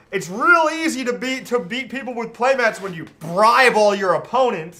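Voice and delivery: loud, high-pitched, mocking angry jeer.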